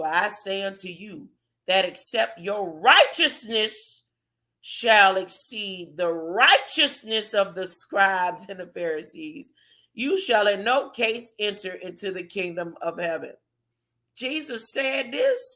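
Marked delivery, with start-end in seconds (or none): 0.0-13.3 very drawn-out, deliberate, slow, low reading voice. Speaker rereads a Bible verse aloud to listeners, reading it very slowly. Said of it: "Let me read that real slow".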